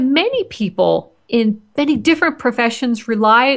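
ordinary delivery

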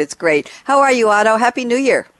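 speaking through laughter. The host greets a guest after reading out a quote, can't stop laughing. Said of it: "I can't stop laughing at this quote".

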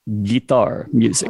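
put-on deep Russian accent. Retelling small talk with Slava, giving his answer about music: imitating Slava's deep Russian accent. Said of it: "in a deep Russian accent".

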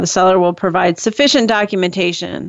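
plain

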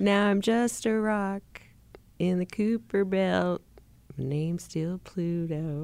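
laughing through a put-on persona voice. Playing Pluto after being urged to do it once more, laughing while speaking as Pluto. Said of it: "I just can't while I'm laughing".

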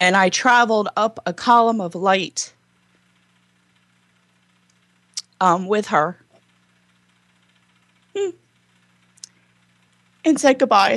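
emotional, choking up, tearful. Recalling saying goodbye to a previous soul, emotional and choking up. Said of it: "this is a little emotional".

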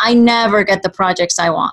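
ordinary talk, nothing marked

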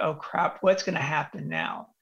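ordinary talk, nothing marked

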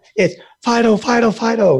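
frantic, panicked, strained, very high voice. Showing how someone calls a dog out on the road, high-pitched panicked calling. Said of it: "I can't get my voice up really high".

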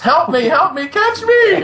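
put-on damsel-in-distress scream. Retelling jumping a railing and calling to a friend, retelling a maiden-in-distress scream. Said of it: "I screamed at him like a maiden in distress".

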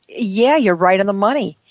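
normal talking voice

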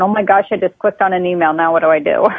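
ordinary delivery

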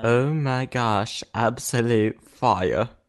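weird fake British accent, very slow. Reacting with a joke line: put-on British-sounding voice. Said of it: "It's, like, British there".

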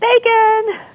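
high, yelled, yelping dog voice.

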